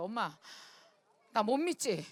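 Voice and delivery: slow, play-acted, tearful weeping in a pleading tone. Retelling how a son begged to quit school: imitating son's crying plea. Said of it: "막 울면서 그러더라고".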